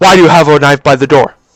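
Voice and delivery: put-on hard, stern cop voice, stern. Retelling police asking about a knife: imitating a loud stern police voice. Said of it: "with a really loud voice".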